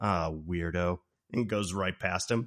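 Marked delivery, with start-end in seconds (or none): 0.0-1.0 mock subtle muttering, much lower and quieter. Retelling a woman's remark as a man passes her cart, retelling a mutter under breath. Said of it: "really subtle under her breath".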